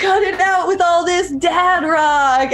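acted-out, high-pitched screamed outburst. Retelling what a guy right behind them screamed, retelling a guy screaming. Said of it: "he was screaming".

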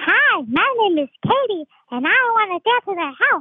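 high, made-up cupcake character voice. Asked what the cupcake in their story sounds like, the storyteller answers in a cupcake character voice. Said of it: "Do you have a voice for that?".

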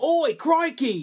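put-on very high Australian accent on "crikey". Imitating how a character copied Steve Irwin: Steve Irwin impression. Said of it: "imitate, uh, Steve Irwin".

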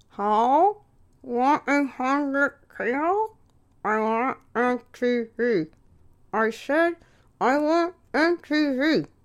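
high mock mumbling with the jaw clamped shut. Retelling ordering cable TV on the phone, mimicking speaking with wired jaw. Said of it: "I have wires in my mouth".

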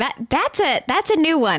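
high voice, talking through helpless laughter. Reacting to a new kind of answer, laughing while talking. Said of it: "I can't stop laughing".

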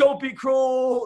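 put-on yell, light, high-pitched. Retelling yelling at a late performer at a concert: imitating own yell. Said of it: "I'm yelling".

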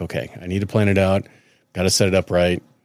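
ordinary delivery

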